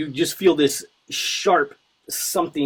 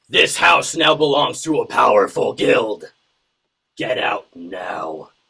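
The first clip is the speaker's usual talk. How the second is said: booming, resounding, rolling voice; 3 semitones lower, 4 dB louder than usual. A game master voices an unseen speaker heard across the floor: booming voice. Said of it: "you hear this booming voice roll out across the entire floor that says".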